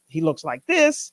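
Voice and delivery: ordinary talk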